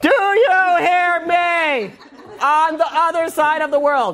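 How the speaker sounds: put-on high, drawn-out, rising yell. Imitating talking to an old person on a video chat: mock shouting. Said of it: "they have to scream".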